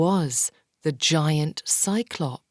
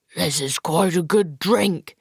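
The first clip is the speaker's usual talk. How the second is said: grunting, louder; 3 dB louder than usual. Narrator voicing a character who has just drunk, grunting. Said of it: "he grunted".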